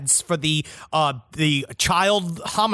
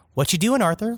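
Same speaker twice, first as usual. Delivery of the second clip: put-on offhand, nonchalant, unbothered tone; 5 semitones higher than usual. Retelling how a psychologist reacted in the clip: imitating a casual, unbothered question. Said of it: "she's acting as if".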